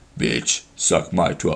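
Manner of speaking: very deep, hushed, near-whispered rumble. Speaker showing Zach how deep their voice sounds right now, very deep voice. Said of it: "I can talk so deep right now".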